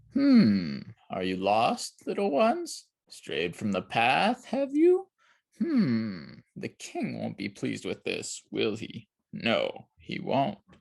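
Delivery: menacing, slow, swooping, sinister storybook villain voice. Narrator reads a hidden voice from the trees speaking to lost children, sinister voice. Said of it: "heard a sinister voice from the trees".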